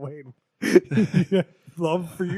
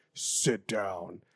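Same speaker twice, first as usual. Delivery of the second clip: mock low, deep voice, pitched down; 10 semitones lower, 9 dB quieter than usual. Retelling how he changed his voice to say sit down: mock low, deep voice. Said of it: "change his voice low like that".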